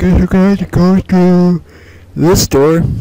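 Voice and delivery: speaking through a yawn. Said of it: "Sorry, I yawned".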